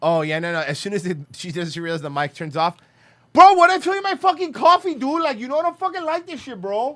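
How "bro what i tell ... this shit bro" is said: shrill, very high-pitched, angry, mad tirade. Acting out how she sounds once she realizes the mic is off, imitating a mad woman. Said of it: "hear her when she's mad".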